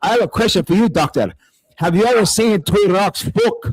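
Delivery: put-on Scottish accent. Retelling a question put to a doctor on a panel: scottish accent. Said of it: "So I came in Scottish".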